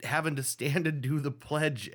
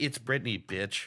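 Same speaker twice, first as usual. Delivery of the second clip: mock sassy tone, put-on sass; 2 semitones lower than usual. Repeating a catchphrase for fun: put-on sassy delivery. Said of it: "I like saying that all sassy".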